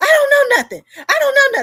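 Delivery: very high, very loud, shrill frantic yell. Reporter recounting a call to dr. amos's former wife, imitating a woman flipping out. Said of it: "the lady totally flipped".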